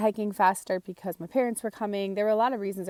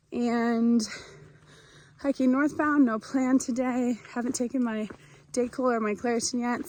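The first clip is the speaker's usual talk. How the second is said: huffing and puffing, panting, higher pitch; 4 semitones higher than usual. Hiker starting a day on the Appalachian Trail, huffing and puffing. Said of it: "I'm huffing and puffing and it's hard to catch my breath".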